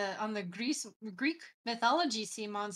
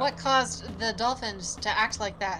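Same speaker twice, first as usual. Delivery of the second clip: normal talking voice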